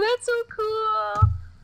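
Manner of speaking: very high, slow, soft mock gushing.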